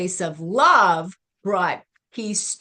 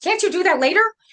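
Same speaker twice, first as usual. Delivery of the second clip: impolite, huffy, pitched-up irritation; 12 semitones higher, 4 dB louder than usual. Retelling a woman's remark: mock-huffy voice. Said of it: "in a in a huffy voice".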